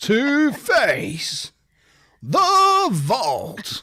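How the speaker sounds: high, dramatic game show announcer voice. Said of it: "it's like your game show voice".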